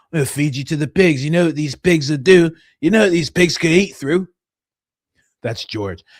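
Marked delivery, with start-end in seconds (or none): 0.1-4.3 put-on menacing, threatening, old British gangster voice. Retelling a movie scene where an old British guy threatens someone: imitating an old British gangster. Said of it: "There was an old British guy, and he's like".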